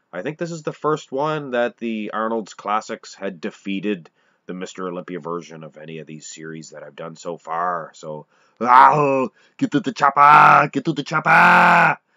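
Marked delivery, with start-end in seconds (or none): 8.6-11.9 booming, very loud put-on bellow, slow, drawn-out "get". Closing a video, doing an Arnold Schwarzenegger impression. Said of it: "There's my Arnold impression".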